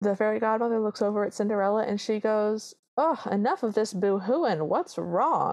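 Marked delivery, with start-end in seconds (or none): 3.0-5.5 put-on light, slight Southern twang accent. Retelling a Cinderella scene, voicing the fairy godmother in a southern accent. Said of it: "She has a very sort of southern accent".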